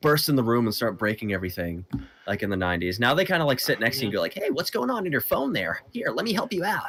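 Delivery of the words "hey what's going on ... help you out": chummy, friendly mascot patter, pitched up. Speaker describes how modern corporate mascots talk, in an insurance mascot cadence. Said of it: "has the exact cadence of like an insurance mascot".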